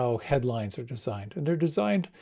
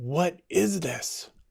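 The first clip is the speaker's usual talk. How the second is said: put-on fierce, pressing, demanding tone; 4 semitones higher than usual. Telling a story, voicing the korean teacher's question, retelling a fierce demand. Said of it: "said a little more fiercely".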